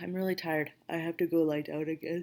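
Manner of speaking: tired, drowsy voice with yawning. After going over next week's schedule, the speaker admits being tired: sleepy, yawning. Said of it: "Sorry for all the yawning".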